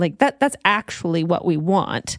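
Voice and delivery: normal talking voice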